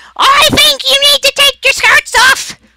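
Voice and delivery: very high, very loud, shrill, squawking parrot yell. Voicing a parrot that calls down from above: parrot yelling. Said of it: "you hear a parrot yell".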